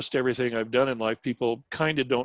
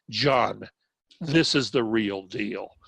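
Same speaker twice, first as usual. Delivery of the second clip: spoken through clenched, gritted teeth; 2 semitones lower than usual. Retelling how a man grabbed him and spoke nose to nose, through clenched teeth. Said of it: "through clenched teeth".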